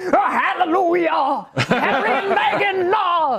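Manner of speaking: slow, bad British accent.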